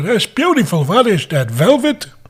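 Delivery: put-on high sing-song old man voice.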